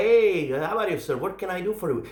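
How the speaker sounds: put-on English with Filipino accent. Recounting a call to Greyhound support, imitating the agent, Filipino English accent. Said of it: "It was a Filipino accent".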